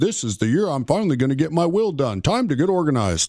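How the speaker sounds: ordinary delivery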